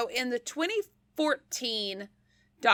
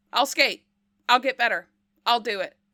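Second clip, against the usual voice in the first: put-on bold, emphatic tone; 3 dB louder than usual. Retelling a skater volunteering to compete: imitating a bold declaration. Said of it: "very boldly was just like".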